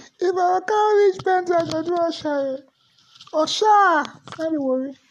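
put-on high-pitched young boy voice. Showing how own voice sounded as a boy: imitating own high-pitched boyhood voice. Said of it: "that's how I used to talk".

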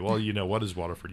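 ordinary talk, nothing marked

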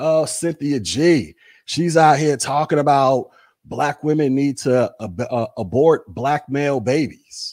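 plain

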